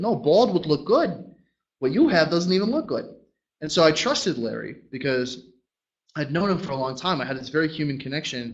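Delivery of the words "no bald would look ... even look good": put-on loud, high-pitched, classic Boston townie accent. Retelling what Larry said back to him, in a classic Boston townie accent. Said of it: "classic Boston towny accent".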